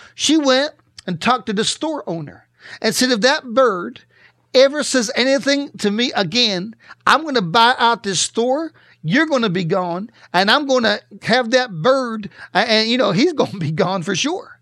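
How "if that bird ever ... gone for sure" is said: plain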